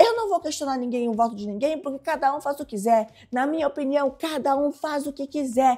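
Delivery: worked-up, heated shouting outburst. Retelling how Eva came shouting at Guilherme: imitating Eva shouting. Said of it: "ela fazia com a mão e gritava".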